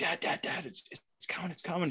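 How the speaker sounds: mock anxious, excited whisper. A father retells his daughter whispering to him as a bird comes in, retelling an anxious, excited whisper. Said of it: "She's just whispering, but so anxious and excited".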